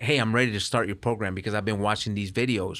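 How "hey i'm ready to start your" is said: usual speaking voice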